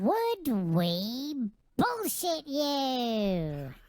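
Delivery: high-pitched voice. Doing the group's catchphrase in the voice they picked, high-pitched voice. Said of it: "I like the high pitch one".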